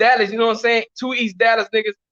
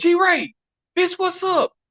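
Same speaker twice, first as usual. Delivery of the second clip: high-pitched call carrying a distance. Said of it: "I say".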